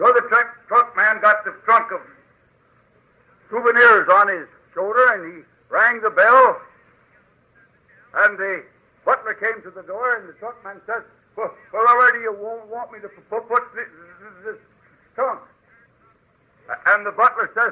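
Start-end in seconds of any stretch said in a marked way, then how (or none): 11.4-15.4 put-on, fake stammering speech. Telling a joke, voicing the truck man asking where the trunk goes: put-on stutter. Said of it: "I st-, stutter myself".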